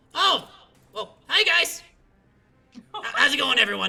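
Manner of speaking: very loud, high, creature-like goblin voice. Narrating to the group, the speaker voices a goblin crawling out: goblin voice. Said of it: "a certain goblin crawl out".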